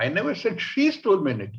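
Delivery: SHE stressed with wide falling tune.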